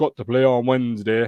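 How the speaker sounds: put-on Yorkshire accent. Repeating a line in a put-on Yorkshire accent. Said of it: "say that in a Yorkshire accent ... trying to be a Yorkshireman there".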